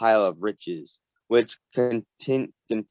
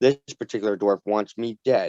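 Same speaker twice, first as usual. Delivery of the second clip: plain reading voice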